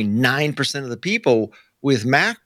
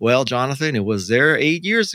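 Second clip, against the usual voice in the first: usual speaking voice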